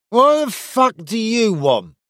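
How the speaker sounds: put-on very high-pitched, slurred drunken voice. Narrator reads a soldier challenging Silas on the road, slurred speech. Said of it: "he slurred".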